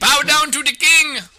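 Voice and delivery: piercing, very high, very loud shrill yell. Recounting a player who shouts random things during a game, retelling a yell. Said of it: "He just starts yelling out shit".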